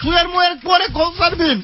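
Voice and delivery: loud, exasperated shouting.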